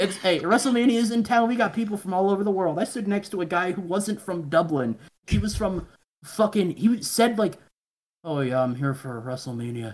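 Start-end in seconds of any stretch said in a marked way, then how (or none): 8.2-9.9 low, deflated, very sad voice. Retelling what a man in town for wrestlemania said, imitating a sad-sounding man. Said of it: "He sounded very sad".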